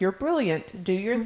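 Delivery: ordinary delivery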